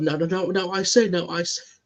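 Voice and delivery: high cartoon orator voice. Picturing how a cartoon character would address a courtroom crowd: Foghorn Leghorn voice. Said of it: "how is he gonna address the".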